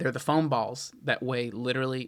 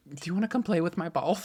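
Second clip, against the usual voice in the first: put-on high, guileless, sweetly earnest little-kid voice; 5 semitones higher than usual. Retelling what the three-year-old kept saying: imitating Wilson. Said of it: "he's so innocent about it".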